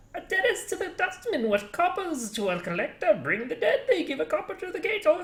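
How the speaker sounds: very high-pitched put-on character voice. Speaker reads a passage aloud, attempting a put-on high-pitched voice. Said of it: "I should be doing high pitch".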